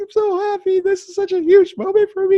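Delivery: very high, tearful, weepy crying voice. Retelling a post-match microphone interview: imitating Trish crying. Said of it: "crying on the microphone".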